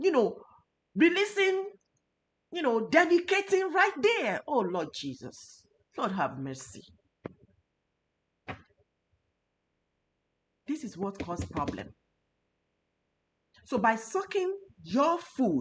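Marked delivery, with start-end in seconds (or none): 4.5-15.6 impassioned, worked-up, low, hushed, emotional pleading tone. Speaker who says they get emotional about food: emotional, worked up. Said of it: "I just I have to talk like that".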